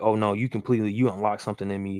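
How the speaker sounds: normal talking voice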